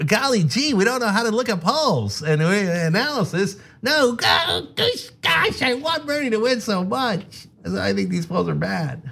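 high, childish, mocking voice. Mocking critics who call the hosts biased, in a childish mimicking voice. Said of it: "use a childish, mimicky voice".

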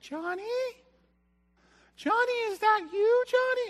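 play-acted, very high, very loud frightened cry. Acting out a girl in a horror film hearing a sound: imitating a scared horror-film girl. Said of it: "she's like".

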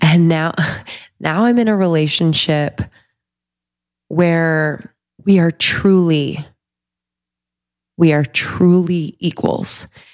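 teary voice, holding in tears. Speaking alone in a studio, holding back tears. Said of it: "I'm not gonna cry".

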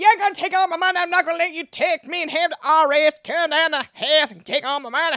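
high, put-on Southern accent, defiant. Voicing a quote on a show, in a put-on Southern accent. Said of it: "I know it's problematic to give it a Southern accent".

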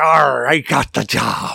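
very slow, drawn-out, creaky, rough pirate voice. Joking with another speaker about a job interview: put-on pirate voice. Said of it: "you gotta be like a pirate".

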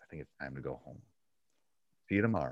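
calm, even, soft, unraised, matter-of-fact voice. Speaker retelling what she says when sending people home, retelling calm, not yelling. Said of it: "and I'm not yelling at them".

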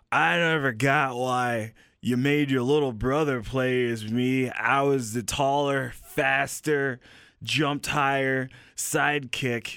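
put-on drunk, bitter, resentful voice. Playing his character as a drunk, bitter version of himself. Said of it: "a drunk, bitter version of me was my character".

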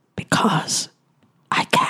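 breathy, close whisper. Voicing a character who whispers into an unconscious man's ear: whispering. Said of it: "And I whisper into his ear".

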